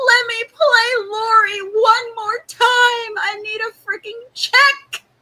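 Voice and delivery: loud, high-pitched, stretched-out actress voice. Imagining an actress banging on the producer's door: Judy Greer impression. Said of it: "crazily good impression of Judy Greer".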